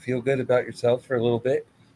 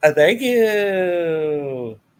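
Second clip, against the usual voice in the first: odd "thank you," "you" high and stretched out; 5 semitones higher, 5 dB louder than usual. Retelling a wrestling segment, imitating Chad Gable's weird thank you. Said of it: "you say thank you weird".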